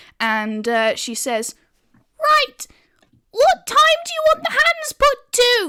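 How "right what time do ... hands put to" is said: tiny, squeaky little voice, very high. Retelling what a woman said up through the tube, in a squeaky little May voice. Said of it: "squeaky little May voice".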